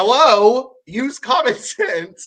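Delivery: loud, drawn-out, stern yelling voice. Retell Casey yelling at them during the board challenge, imitating Casey's yelling teacher voice. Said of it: "I love a teacher voice".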